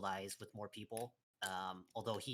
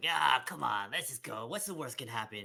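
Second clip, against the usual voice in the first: put-on tipsy chatty voice, louder; 3 semitones higher, 9 dB louder than usual. Voicing a drunk, stumbling character urging a companion along: acted drunk, talkative character. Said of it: "a lot more talkative".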